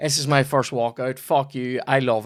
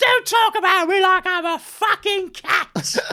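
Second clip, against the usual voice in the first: put-on very high-pitched tipsy woman's voice; 4 dB louder than usual. Retelling what Aaron's mum said in a video: imitating a drunk woman. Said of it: "she's had too much to drink".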